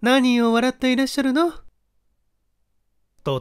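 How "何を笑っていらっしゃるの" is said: very high, easygoing, relaxed, friendly voice. The wife asks her husband a question as he reads his letters, friendly and relaxed. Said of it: "妻が打ち解けた調子で尋ねた".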